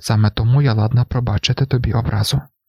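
plain

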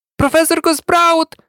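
joyful, ecstatic shout, very high-pitched. A Hufflepuff student calls out to the arriving professor, shouting with great joy. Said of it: "закричав один із гафалпавців із таким щастям".

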